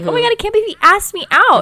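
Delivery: put-on excited panic. Acting out a book character who was just asked out: mock freaking out. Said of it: "she's freaking out".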